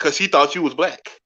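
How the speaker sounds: usual speaking voice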